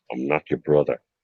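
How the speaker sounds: deep, very low western hero voice. Answering a request to say a line: Clint Eastwood voice. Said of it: "in your best, uh, Clint Eastwood accent".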